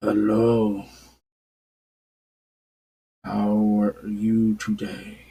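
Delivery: very deep, low, rumbling voice. Game master voices an unseen stranger greeting the party, very low rumbly voice. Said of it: "it's a very low, rumbly voice".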